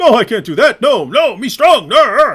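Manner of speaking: mocking dumb-character voice, very loud and slow. Mocking an opponent by acting him out: mocking Hijab impression. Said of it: "It's a character".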